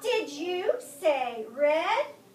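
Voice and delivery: pitch going up at end. A teacher reading a big book with students models a question, rising question intonation. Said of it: "Listen to how my voice goes up".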